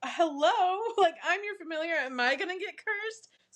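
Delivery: play-acted nervous, frightened, high, anxious voice. Retelling the familiar's question to someone heading to bed, acting out being scared. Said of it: "So she's all scared".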